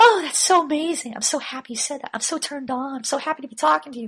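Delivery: put-on woman's voice, very high-pitched. Showing how to tell someone what to say: imitating a woman's voice. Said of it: "I'll use a chick's voice".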